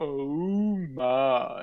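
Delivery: "oh my" slow and lingering, "oh" stretched out. Quoting a famous catchphrase to join the joke: George Takei impression. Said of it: "quoting the wonderful, wonderful George Takei".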